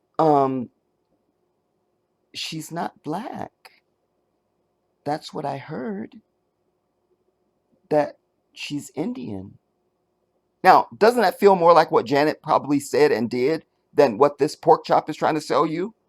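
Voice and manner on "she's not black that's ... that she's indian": soft, quieter, whispery put-on voice. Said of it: "my best [name] impersonation".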